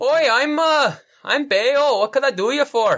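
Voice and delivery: small, high-pitched gnome voice. Game master voicing a gnome greeting players as they walk in, gnome character voice. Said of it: "and he he greets you".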